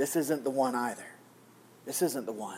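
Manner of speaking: murmured under the breath, quiet, low, hushed. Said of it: "God quietly again says".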